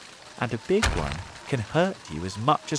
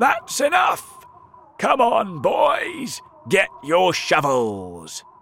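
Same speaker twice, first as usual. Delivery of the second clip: slow, loud shouting; 7 semitones higher, 6 dB louder than usual. One of the cloud men calls out to the boys, shouting. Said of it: "one of the cloud men shouted".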